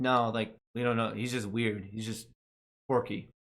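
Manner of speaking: ordinary delivery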